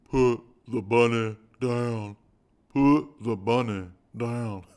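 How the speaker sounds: put-on loud, poorly done Southern accent. Recounting a film, speaker repeats the actor's line as a Nicolas Cage impression. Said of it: "I'm stretching my face out to do the Nick Cage".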